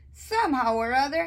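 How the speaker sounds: plain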